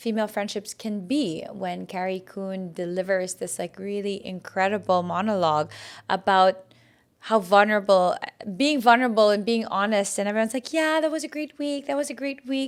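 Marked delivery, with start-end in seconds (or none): 10.7-12.7 cheery, pitched-up, smiling-through-it, brushing-off tone. Retelling how everyone answered after the monologue: imitating someone smiling through it. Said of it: "kinda smiling through it".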